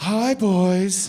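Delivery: high, loud porn-star-style voice. Speaker acting out a crime scene joke, doing Cinnamon's porn star voice. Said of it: "That's my impression of a porn star".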